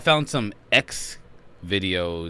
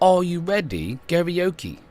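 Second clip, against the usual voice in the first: bad, terrible fake British accent; 11 semitones higher, 4 dB louder than usual. Speaker addressing the ladies and gents, showing off a terrible British accent. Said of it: "Here's my terrible British accent".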